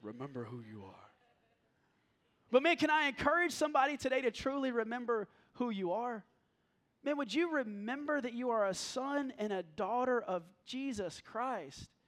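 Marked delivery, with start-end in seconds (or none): 0.0-1.1 bad put-on voice, very deep, very low and hushed. Speaker retelling Mufasa's words to Simba, in a bad Mufasa impersonation. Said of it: "it's a bad impersonation".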